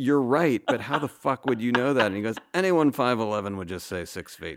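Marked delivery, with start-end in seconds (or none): 0.0-2.1 speech mixed with laughter. Recounting his answer to a writer who guessed his real height, retelling his reply while laughing. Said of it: "I was laughing".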